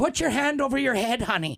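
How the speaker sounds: put-on very high voice with Irish accent. Retelling what a flight attendant said on a flight: imitating an Irish accent. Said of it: "a flight attendant with an Irish accent".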